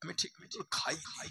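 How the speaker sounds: hushed, whispered voice.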